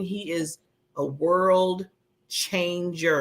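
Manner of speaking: slow, measured, deliberate, word-by-word emphasis. Urging people to reach out to this man, saying it really slow. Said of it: "I'm saying that really slow".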